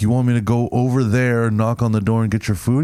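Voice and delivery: ordinary talk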